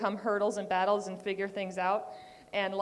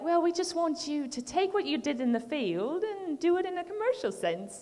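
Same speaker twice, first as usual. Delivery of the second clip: awful put-on British accent, pitched up; 7 semitones higher than usual. Quoting what a man told the speaker, in a very bad british accent. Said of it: "I'm doing a very, very bad British accent".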